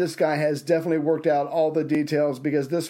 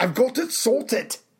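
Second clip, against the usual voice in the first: fake German accent, much higher; 7 semitones higher than usual. Deciding to redo his previous phrase, saying it in a German accent. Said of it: "I should do that in a German accent".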